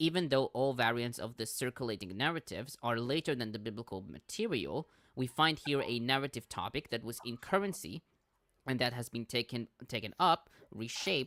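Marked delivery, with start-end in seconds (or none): none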